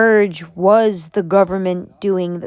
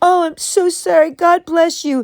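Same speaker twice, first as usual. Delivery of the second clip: phony, put-on sympathetic voice, pitched up; 9 semitones higher than usual. Mocking a woman the speaker calls a phony, Shiny's fake empath voice. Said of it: "Shiny's fake empath voice that she puts on".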